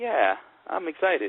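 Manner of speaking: slow, sarcastic fake enthusiasm, sounding indifferent.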